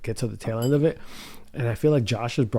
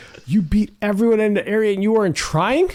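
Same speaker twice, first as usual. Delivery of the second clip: acted outraged scream, very high and shrill; 10 semitones higher, 7 dB louder than usual. Telling a story about being so mad, the speaker retells a furious scream. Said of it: "I'm screaming".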